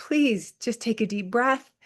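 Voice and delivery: ordinary talk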